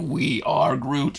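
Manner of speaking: whispered, breathy creature voice. Retelling a sad movie ending, imitating Groot. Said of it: "and he's like".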